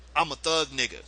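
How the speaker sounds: ordinary delivery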